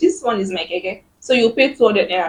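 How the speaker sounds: ordinary delivery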